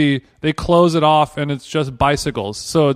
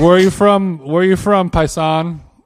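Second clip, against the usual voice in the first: normal talking voice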